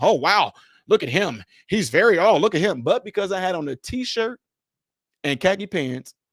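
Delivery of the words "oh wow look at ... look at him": impressed, admiring, wowed exclamation. Imagining how people would react to a suited speaker: imitating impressed onlookers. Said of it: "they'd have been".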